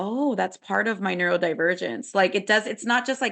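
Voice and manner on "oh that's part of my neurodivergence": plain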